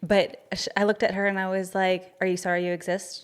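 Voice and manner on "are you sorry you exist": mock snarky, sarcastic tone. Retelling what was said to an over-apologizing girl: retelling own snarky remark. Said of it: "I was so snarky and sarcastic".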